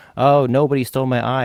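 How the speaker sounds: full-throated shout. Retelling a story, the speaker acts out the Cyclops shouting. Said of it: "So he's just shouting".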